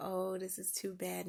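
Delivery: ordinary delivery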